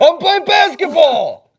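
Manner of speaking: high, slow, loud scream.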